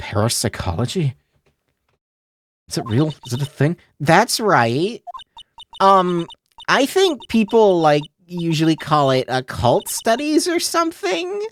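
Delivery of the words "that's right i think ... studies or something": put-on full sing-song, high, swooping valley girl voice. Reading aloud, voicing a female character: Valley Girl voice. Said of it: "everyone gives her a Valley Girl voice".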